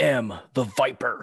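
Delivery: slow, dragged-out, flat wrestling promo cadence, no enthusiasm. Mocking a wrestler's promo cadence: Randy Orton impression. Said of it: "his cadence for the way he talks".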